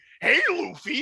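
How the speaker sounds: very high, awful dub-style voice. Showing how Bartolomeo sounds in the English dub: imitating Bartolomeo's English dub voice. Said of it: "he sounds like this".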